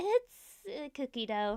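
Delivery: ordinary delivery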